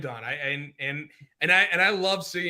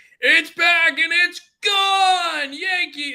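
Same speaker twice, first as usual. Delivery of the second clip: thrilled play-by-play voice, very high and slow; 13 semitones higher, 8 dB louder than usual. Retelling a Yankees game call you listened to, imitating his very excited voice. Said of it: "his voice sounded very excited".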